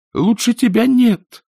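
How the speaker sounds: shrill, high despairing shout, sobbing through tears. A little boy answers a woman, shouting in despair through tears. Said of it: "с отчаянием закричал он сквозь слезы".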